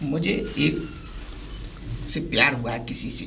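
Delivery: soft, hushed, shy whisper.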